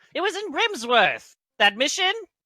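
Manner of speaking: irritated, very high outburst. Recounting a scene, the speaker voices Dabbledob answering Garth; mad Dabbledob voice. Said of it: "And then he gets all like mad".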